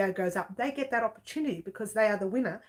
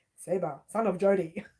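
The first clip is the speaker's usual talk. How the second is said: plain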